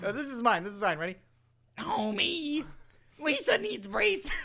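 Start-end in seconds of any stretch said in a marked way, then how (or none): 1.8-4.3 awful, very high, drawn-out, squeezed dying-animal voice. Claiming nobody can do a Marge impression, the speaker tries his own: bad Marge impression. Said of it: "Every time it sounds like a fucking animal dying".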